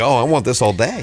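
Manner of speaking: ordinary talk, nothing marked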